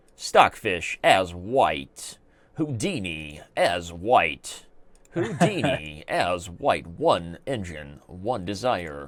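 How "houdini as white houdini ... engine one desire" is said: small, hushed movie-trailer narration voice. Announcing round four of a chess engine match, in a little movie voice. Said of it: "little movie voice".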